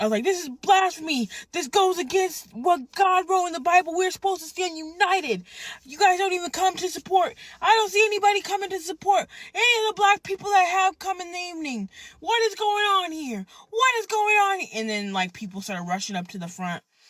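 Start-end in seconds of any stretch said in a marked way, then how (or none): 0.2-14.6 play-acted very high, freaked-out yelling. Retelling walking up to the stage in church: retelling own yelling. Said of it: "I started yelling".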